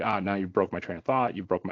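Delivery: normal talking voice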